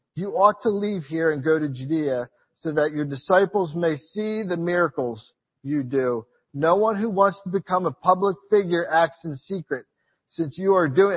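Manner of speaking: ordinary talk, nothing marked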